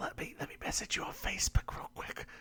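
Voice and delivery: whispered, soft and hushed.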